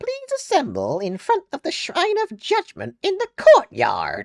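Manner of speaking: very high, very loud, swooping voice. Showing own take on a game character's announcement: own Monokuma voice. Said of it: "my voice for Monokuma is so much better".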